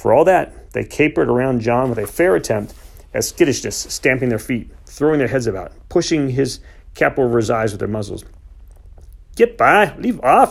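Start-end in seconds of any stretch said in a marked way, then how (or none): 9.4-10.5 loud shouting yell, stretched out slowly. Narrator voicing a man shooing off capering horses; shouting. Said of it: "he shouted".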